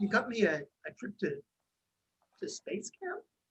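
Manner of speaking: crying, choked up, stumbling, disbelieving, wavering pitch. A dad reacting to his child's fiftieth-birthday gift, crying. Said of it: "Why is your dad crying?".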